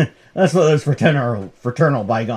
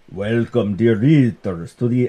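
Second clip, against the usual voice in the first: put-on old horror-movie voice. Voicing a comic-book horror host's welcome, Bela Lugosi voice. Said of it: "I don't know why I sound like Bela Lugosi suddenly".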